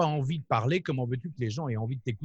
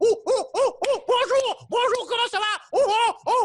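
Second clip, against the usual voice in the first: very high, goofy, silly monkey chatter; 7 dB louder than usual. Explaining how to make yourself look ridiculous, the speaker demos a silly monkey voice. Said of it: "tu peux même faire le singe".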